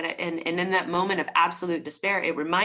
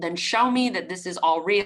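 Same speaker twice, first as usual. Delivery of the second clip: ordinary talk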